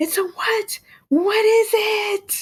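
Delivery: high, slow, frustrated yelling.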